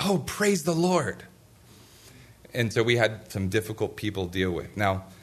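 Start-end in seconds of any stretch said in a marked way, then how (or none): 0.0-1.2 mock, very high, very loud booming exclamation. Recalling a church lady's reaction to news of a death, retelling a very loud exclamation. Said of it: "she said with a very loud voice".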